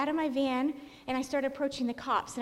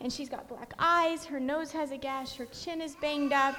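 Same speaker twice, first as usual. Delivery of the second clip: normal talking voice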